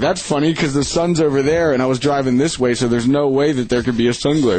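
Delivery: ordinary delivery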